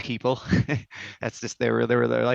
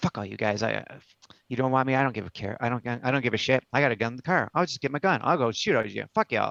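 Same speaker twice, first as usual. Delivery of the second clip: mock-mumbled, muttered under the breath. Retelling what a man said before he left, the speaker acts out his mumble under breath. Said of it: "he mumbles something under his breath like".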